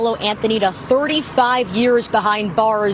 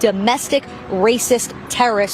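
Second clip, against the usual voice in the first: normal talking voice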